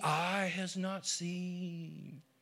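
very hushed, weird, eerie voice with "seen" drawn out. Speaker imitating people who say god's things can't be understood: mocking a weird, creepy voice. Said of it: "They do their weird, creepy voice like that".

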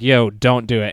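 normal talking voice

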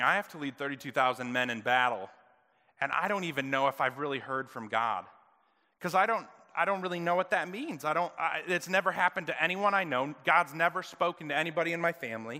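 ordinary delivery

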